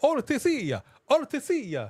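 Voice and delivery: put-on Italian-accented speech. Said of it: "You can say O T C in an Italian accent".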